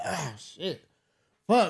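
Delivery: play-acted strained, huffing, groaning grumble. Retelling a mechanic at work on a car: imitating a mechanic huffing and puffing. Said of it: "making, like, these noises as if, like, the job was just, like, hard as fuck".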